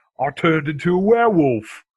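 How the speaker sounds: mock British werewolf man voice, high and loud.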